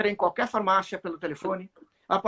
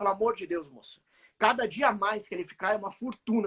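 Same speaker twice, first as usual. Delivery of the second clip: ordinary delivery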